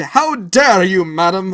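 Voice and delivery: loud screaming outburst. Recounting a feud at an event, retelling a scream from on stage. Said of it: "someone screamed".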